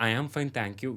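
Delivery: ordinary delivery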